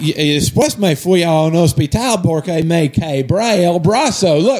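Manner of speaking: put-on Spanish spoken with a thick Australian accent. Retelling what a housemate said at breakfast: spanish with thick australian accent. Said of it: "in this Spanish with this really thick Australian accent".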